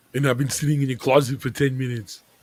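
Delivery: put-on killer robot voice. Joking about meeting oneself in the mirror: Terminator voice. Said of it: "you sound so much like him".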